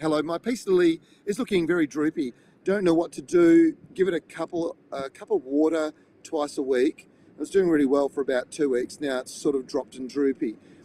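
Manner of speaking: plain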